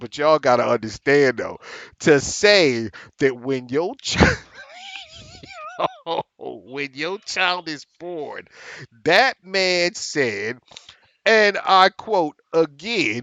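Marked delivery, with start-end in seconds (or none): 0.0-8.5 swooping, with words broken up by laughter. Recounting a news story, apologizing for laughing: laughing while talking. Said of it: "I'm sorry for laughing at this situation".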